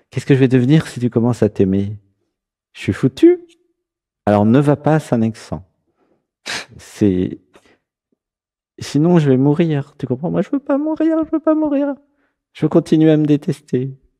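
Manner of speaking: small, high, sing-song self-critical voice. Acting out what the inner voice tells the listener: voicing the critical inner voice. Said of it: "c'est la petite voix qui, qui, qui t'aime pas".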